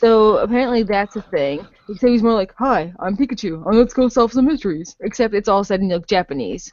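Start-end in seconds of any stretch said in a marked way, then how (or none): 2.6-5.0 male detective character voice. Describing a movie trailer, doing Pikachu's line in a low male voice. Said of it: "He's kind of has like a low male voice".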